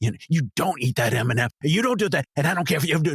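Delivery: put-on angry ranting. Retelling a monologue performed in an acting class: imitating an angry rant. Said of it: "really pissed off about it".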